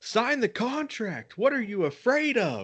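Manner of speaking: furious, very high, swooping southern yell. Retelling how Jeff is angry again and screams: imitating Jeff Hardy screaming. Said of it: "and he screams".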